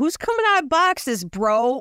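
blurted, high-pitched yell. Yelling a favorite quote at random: yelling a Vince Russo quote. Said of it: "I just yell".

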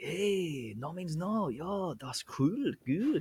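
put-on German accent. Retelling what the guy running the shop said to him, in a German accent. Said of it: "good accent, man. That's fucking spot on".

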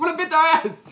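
high, loud, feisty, bossy mock-tough voice.

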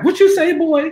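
put-on very high-pitched, scolding old-lady voice.

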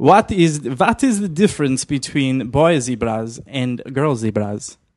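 put-on German accent. Telling a Jungle Cruise joke, speaker redoes the setup in a German accent. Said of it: "I'm supposed to do this in a German accent".

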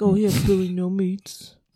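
mock heckler voice. Imitating hecklers mocking someone who showed up alone. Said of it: "That's probably what they sound like".

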